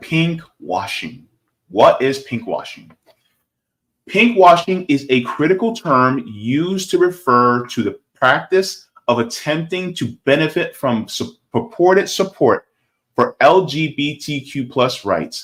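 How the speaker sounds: slow, careful reading, every word very distinct. Reading a definition aloud to viewers so they get the information, slow, very distinct reading. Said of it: "I'm going to read kind of slow, but very distinctly".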